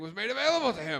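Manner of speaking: giddy, swooping, high, rushed excitement. Retelling a character's line as the speaker heard it, mock super excited. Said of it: "he got super excited".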